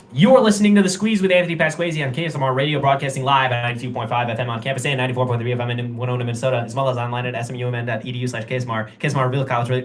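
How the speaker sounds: very fast auctioneer-speed patter, rattled off. A radio host reads the station identification: very fast delivery. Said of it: "I tried to say it".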